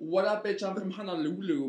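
put-on Brooklyn accent. Recounting a movie plot, quoting the rival from Honolulu, in a Brooklyn accent. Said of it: "but she says it with a Brooklyn accent".

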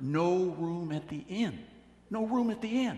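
theatrical stage whisper. Retelling how a prompter fed a line to a child: imitating a stage whisper. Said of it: "whispering in a stage whisper".

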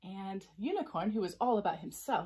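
ordinary delivery

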